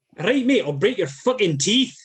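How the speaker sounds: attempted Scottish accent. Trying out accents one after another, the speaker gives a scottish accent a go. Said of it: "Scottish accent you probably know, but I'll give it a go".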